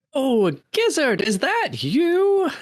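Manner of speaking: shrill, very high-pitched calling out. An old friend calls out to Gizzard through a crowd: shrill Fernanda Featherington voice. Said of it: "you hear a shrill voice say".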